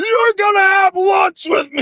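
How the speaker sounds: loud, shrill, very high bellowed shout. Retelling Beast demanding Belle have lunch with him, Beast shouting. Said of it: "This motherfucker shouting".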